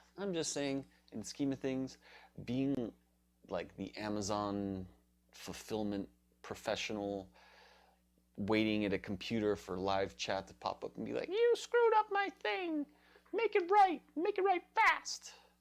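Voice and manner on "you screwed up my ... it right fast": very high-pitched, angry, cartoonish squeak. Voicing an imagined complaint in an Amazon live chat: mock-angry Mickey voice. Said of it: "That was like an angry Mickey voice".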